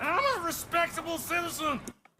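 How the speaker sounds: put-on high-pitched drunken speech. Insisting to an officer who asks for calm: sounding drunk. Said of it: "It sounds like you're a drunk bugger".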